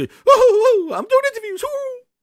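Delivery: silly cartoon mouse voice, whooping, very high and loud. Mocking an executive going around doing interviews: mocking imitation of Phil. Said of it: "going around like goddamn Mickey Mouse. Go".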